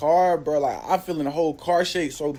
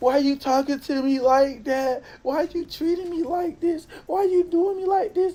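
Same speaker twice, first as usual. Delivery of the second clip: mock sobbing voice, very high and tearful; 11 semitones higher than usual. Retelling an argument, quoting a woman who started crying again: imitating someone crying. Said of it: "So she started crying again".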